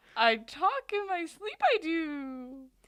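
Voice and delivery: very loud, slow, high bellow, do stretched out. Joking about Yoda at a sleep clinic: Yoda voice. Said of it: "He's at the sleep study, and he's like".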